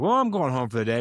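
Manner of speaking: cheerful, upbeat, chipper, quick delivery. Retelling a guy leaving a meeting with law enforcement partners, imitating a chipper tone. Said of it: "he's in a chipper mood".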